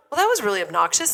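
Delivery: normal talking voice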